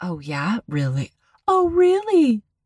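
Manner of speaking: coy, giggly, high, sing-song, teasing flirtatious voice. Retelling recorded phone calls, imitating Pam. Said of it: "She's like".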